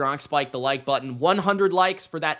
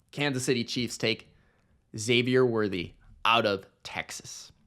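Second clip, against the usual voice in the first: ordinary delivery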